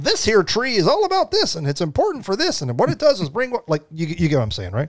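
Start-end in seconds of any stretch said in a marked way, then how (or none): 0.0-3.7 odd, high, sing-song, swooping museum-guide voice. Describing an interactive plant display, voicing the land keeper: weird land keeper voice. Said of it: "my voice went to that weird thing".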